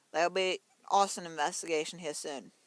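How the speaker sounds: ordinary delivery, nothing marked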